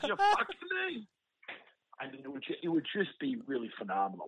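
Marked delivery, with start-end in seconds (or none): 0.1-1.1 play-acted, very high-pitched screaming rant. Retelling a past rant about money, acting out how he started screaming. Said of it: "I start screaming. I'm like".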